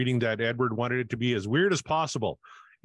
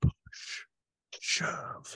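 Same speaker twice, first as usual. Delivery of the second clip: soft, hushed, barely voiced whisper. Inviting listeners to whisper along: whispered. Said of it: "Whisper it with me".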